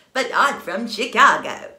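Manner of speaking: put-on very loud delivery in a transatlantic accent. Imitating Cary Grant in a film: Cary Grant transatlantic accent. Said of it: "Nobody in Chicago talks like that".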